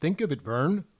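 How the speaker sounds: hammed-up put-on Upper Midwest Minnesota accent. Reviewing a hot dish on request, asking a fellow taster, Minnesotan accent. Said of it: "review it in your best Minnesotan accent".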